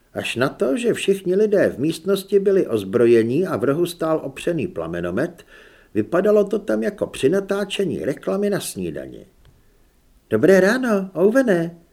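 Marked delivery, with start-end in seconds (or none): 10.3-11.7 cheerful, bright, high, loud calling out. Narrating a woman in a room of armed people, calling out cheerfully. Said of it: "zvolala vesele Julie".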